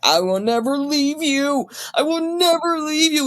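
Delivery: play-acted crying, very high, tearful, pleading. Retelling a scene where a character promises a child: imitating Zeynep crying. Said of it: "And she's crying in the street".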